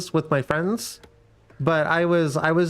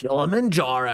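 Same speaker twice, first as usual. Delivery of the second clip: put-on announcer voice, not quite gravelly; 4 semitones lower than usual. Speaker tries a game announcer call, attempting a gravelly announcer voice. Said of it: "my voice can't go as gravelly".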